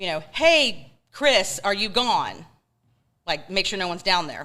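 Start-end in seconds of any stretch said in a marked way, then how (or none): 0.0-2.4 mock yell, very slow and drawn-out. Recalling checking the basement before turning off the lights; retelling a yell. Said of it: "and I yelled".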